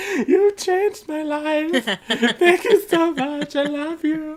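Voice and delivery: mock teary crying, very high, loud, sobbing gush. Retelling hugging someone at the end of the second weekend: imitating own past crying. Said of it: "I have my arms around Carmen's neck crying".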